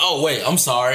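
ordinary talk

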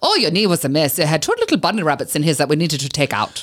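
put-on speaking in a German accent. Retelling what a man told them, German accent. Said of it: "German accent".

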